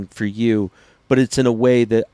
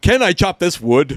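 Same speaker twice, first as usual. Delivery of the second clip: silly, dopey, high-pitched put-on voice; 8 semitones higher than usual. Imitating a guy from YouTube videos: goofy put-on voice. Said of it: "This is this guy's voice".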